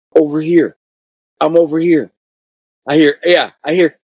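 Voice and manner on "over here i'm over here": put-on small girl's voice calling out. Retelling hearing a voice from a doll head: imitating a little girl's voice. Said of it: "I hear a little girl's voice go".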